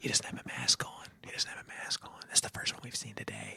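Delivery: soft, unvoiced whisper. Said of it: "And they were like".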